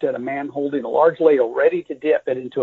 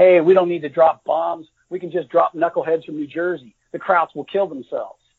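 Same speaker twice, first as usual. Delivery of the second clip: ordinary delivery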